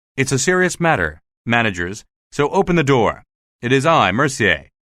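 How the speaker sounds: ordinary delivery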